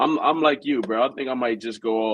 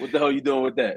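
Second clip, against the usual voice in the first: challenging, disapproving scolding tone; 3 semitones higher than usual. Recalling what the uncles said about the speaker's ear piercing: imitating scolding uncles. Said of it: "I hear from my uncles".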